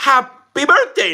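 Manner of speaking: sickly, cracking, very high voice. Sick speaker wishing nadia a happy birthday, voice cracking. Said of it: "Ooh, my voice cracked".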